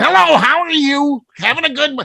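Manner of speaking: high chatty comedian voice. Retelling meeting someone at an airport: Louie Anderson impression. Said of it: "a very distinct voice".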